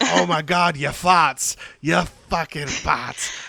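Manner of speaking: put-on odd, very slow, drawn-out Boston accent. Retelling a film character's rant: imitating Robert Pattinson's weird Boston accent. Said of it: "this weird Boston accent that kinda comes out of nowhere".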